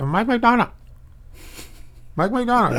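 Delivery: put-on Chinese accent, very high and fast. Retelling a woman on the phone, speaker imitates her with a chinese accent. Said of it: "That's with the Chinese accent".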